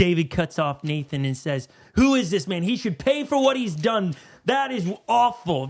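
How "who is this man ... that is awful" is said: mock furious, indignant, fuming, outraged outburst. Retelling David cutting off Nathan, imitating David fuming.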